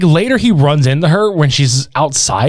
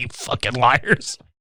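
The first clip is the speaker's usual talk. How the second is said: mock whispered, disgusted tone; 4 semitones lower, 9 dB quieter than usual. Retelling a film scene where a man confronts lying girls: imitating disgust. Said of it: "He's just so disgusted".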